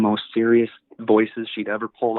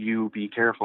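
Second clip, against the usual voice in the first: put-on very serious tone, slower; 5 dB quieter than usual. Speaker retelling mom's warning about a Ouija board, imitating a very serious tone. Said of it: "she tells me in like this very serious tone".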